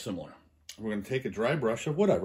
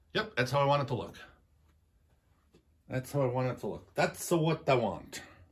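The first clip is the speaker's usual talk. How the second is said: really bad, clumsy, put-on Italian accent; 3 semitones higher than usual. Demonstrating a paint technique on video, in a bad Italian accent. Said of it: "Forgive my really bad Italian accent".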